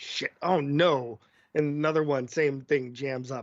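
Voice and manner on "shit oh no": acted-out panicked voice. Acting out a guard whose rifle jams in a TV-style scene: guard panicking over jammed rifle. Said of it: "He's like".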